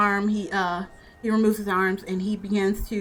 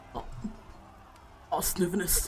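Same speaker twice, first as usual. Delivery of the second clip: faint, whispered dying voice; 3 semitones lower, 10 dB quieter than usual. Narrating a game scene, the speaker voices the dying father pulling you closer. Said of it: "to pull you a little closer, like".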